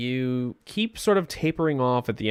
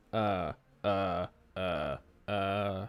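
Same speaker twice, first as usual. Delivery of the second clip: soft monotone uhs. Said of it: "flat, monotone voice".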